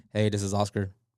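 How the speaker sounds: unenthusiastic, flat delivery. Explaining phone manner, showing how a greeting sounds without a smile: uninterested phone greeting. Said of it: "You just seem so uninterested".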